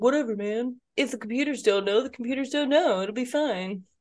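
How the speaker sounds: relaxed, laid-back surfer dude voice. Recalling how their younger self talked back then, talking like a surfer. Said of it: "And I talked like a surfer".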